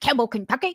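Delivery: put-on condescending, know-it-all, as-if-obvious tone. Retelling the other speaker's reply as if he should know: imitating a know-it-all question. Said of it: "what you say that like I know?".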